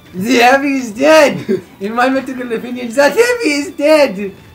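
very high, booming, belted-out voice. Player quoting a TF2 line during a game with friends, TF2 Medic impression. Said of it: "sound like the medic a little bit".

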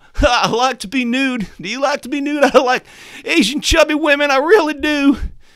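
very high, squeaky put-on politician caricature voice. Explaining how to build a Bane voice, starting from a Bill Clinton impression. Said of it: "it's basically just Bill Clinton".

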